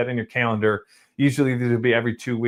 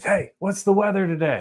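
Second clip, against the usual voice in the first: high, loud, hollered-out scream; 8 semitones higher than usual. Retelling how a tour guide opened the door and yelled at him, retelling a scream.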